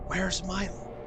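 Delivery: whispering in character. Voicing a character asking where milo is: whispering in character. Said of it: "hear Mahira's voice whisper".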